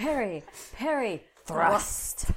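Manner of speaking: high, loud, sharp shouted cries.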